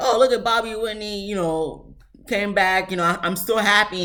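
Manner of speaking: dripping sarcasm, tongue-in-cheek delivery. Retelling a line said at a lunch: imitating a sarcastic remark. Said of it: "he said it, like, so sarcastically".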